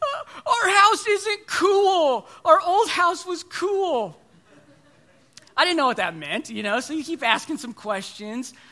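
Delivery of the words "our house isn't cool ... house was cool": put-on very loud, high, tearful crying toddler voice. Retelling a three-year-old's bedtime complaint: imitating Jonah crying. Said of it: "through tears, as only a three-year-old can say it".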